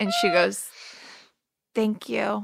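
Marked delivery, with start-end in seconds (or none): 1.7-2.4 whispered, quieter. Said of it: "There's so many great whisper moments".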